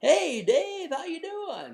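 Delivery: peppy, salesy, very high, swooping delivery. Describing calling leads, demonstrating the greeting he was told to avoid, in a salesy voice. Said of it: "not being salesy".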